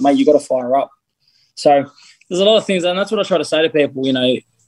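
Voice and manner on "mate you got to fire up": ordinary delivery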